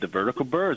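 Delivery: ordinary delivery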